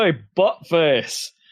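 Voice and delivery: put-on loud Glaswegian accent. Imitating enemies in a game who spot the player: Glaswegian accent. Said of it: "in a, like, a Glaswegian accent".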